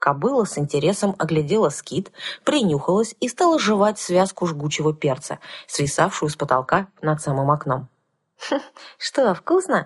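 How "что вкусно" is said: high, snide, sarcastic, needling tone. The narrator asks the mare, which is chewing hot pepper, snidely. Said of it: "ехидно спросила я".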